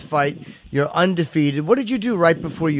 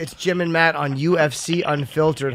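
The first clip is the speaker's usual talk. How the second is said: ordinary talk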